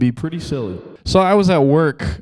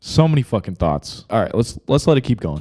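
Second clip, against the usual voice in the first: ordinary talk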